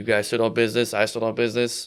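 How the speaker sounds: ordinary talk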